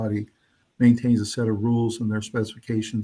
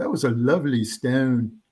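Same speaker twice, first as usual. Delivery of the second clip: put-on slow, measured British sports commentator accent; 2 semitones higher than usual. Imitating the british and scottish curling announcers: imitating a british announcer. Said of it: "but the British guys and the Scottish guys, they're like".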